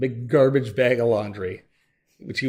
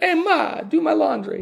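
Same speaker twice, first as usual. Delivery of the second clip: put-on Italian accent, very high and drawn out; 3 dB louder than usual. Showing how to speak italian by gesturing: mock italian accent. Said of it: "That's how you speak Italian".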